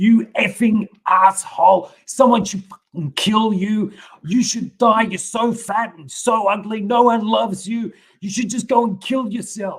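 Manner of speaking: acted, very loud, shrill, furious top-of-lungs scream. Retelling a relative's attack with a knife: imitating someone screaming in rage. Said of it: "she screamed at me at the top of her lungs in this rage".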